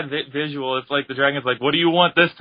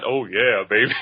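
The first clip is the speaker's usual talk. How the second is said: put-on dragon voice, much lower; 6 semitones lower than usual. Friends joke about a dragon's voice, Shenron voice. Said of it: "imagine the voice of Shenron like that".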